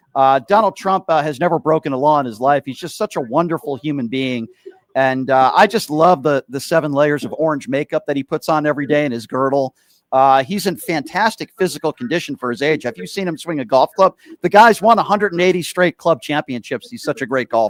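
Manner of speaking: ordinary talk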